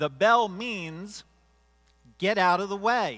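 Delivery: very loud, drawn-out, high rebuking yell. Retelling what a woman racing past on the path yelled, retelling a yell. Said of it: "She yells out".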